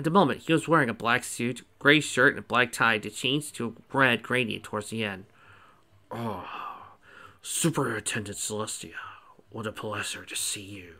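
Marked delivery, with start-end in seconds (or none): 6.1-10.8 soft, hushed, low, deep growly bass voice. Reading a story, the narrator voices the principal greeting the superintendent in a growly, bassy voice. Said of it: "he said in a growly, bassy voice".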